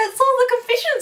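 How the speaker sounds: high, loud excited call.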